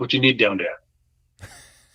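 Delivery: put-on Boston accent. Retelling calling over a bartender in San Diego, imitating his Boston accent. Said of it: "the bartender had a Bostonian accent".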